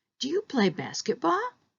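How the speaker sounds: rising pitch on the word basketball. Yes-or-no question example in an intonation lesson, rising intonation at the end. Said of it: "we know it's a rising intonation pattern".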